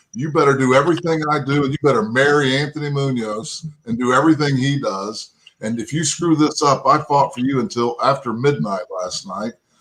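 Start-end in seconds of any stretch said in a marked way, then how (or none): none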